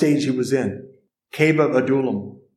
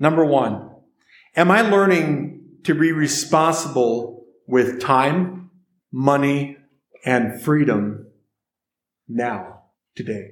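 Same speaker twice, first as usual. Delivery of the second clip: unhurried, slow, measured, deliberate reading. Speaker reading reflection questions to listeners, slowly. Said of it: "I'm going to read them slowly".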